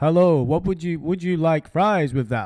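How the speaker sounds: robotic computer voice, as if through a phone. Joking about making a phone speak to someone: mock robot voice. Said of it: "some kind of computer program going on in the phone".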